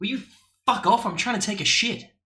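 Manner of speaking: put-on very high, testy, irritated snarling snap. Telling a joke, voicing the big bad wolf who snaps: snapping as the wolf. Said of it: "the big bad wolf snaps and goes".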